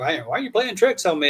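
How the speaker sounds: annoyed, perturbed, accusing, put-out tone. Retelling what she said when annoyed with the speaker: imitating someone perturbed. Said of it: "she was kinda, you know, perturbed with me".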